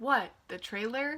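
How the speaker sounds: ordinary talk, nothing marked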